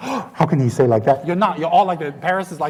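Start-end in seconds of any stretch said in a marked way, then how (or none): 0.0-1.3 slow, play-acted, appalled and scandalized tone. Imitating the listeners' reaction to the word: imitating the shocked audience. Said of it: "You all should go like this".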